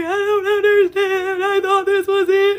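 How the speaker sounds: mock very high, tearful bawling and sobbing. Retelling an old voice message about a past love: imitating own past crying. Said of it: "I was bawling my eyes out".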